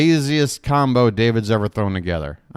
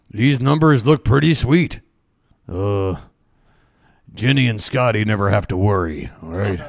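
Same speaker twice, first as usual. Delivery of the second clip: put-on low, older man's voice with Minnesota accent; 4 semitones lower than usual. Commenting on the numbers as a dad: obscure Fargo old dad impression. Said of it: "my obscure Fargo old dad impression".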